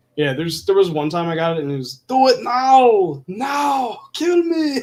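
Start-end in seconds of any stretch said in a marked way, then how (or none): 2.1-4.9 very high, very slow, loud, drawn-out stretched words. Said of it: "you hear [name]'s voice".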